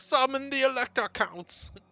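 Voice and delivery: put-on commanding emperor voice. Imitating what the character usually says: Karl Franz impression. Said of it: "usually he's like".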